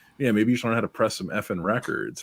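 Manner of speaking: normal talking voice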